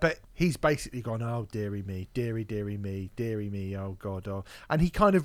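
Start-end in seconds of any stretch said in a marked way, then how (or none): 1.2-4.4 acted, mildly dismayed fretting, a bit upset. Retelling a video reviewer's reaction to a corporate acquisition: imitating Anthony Fantano getting upset. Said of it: "gets a bit upset about it all".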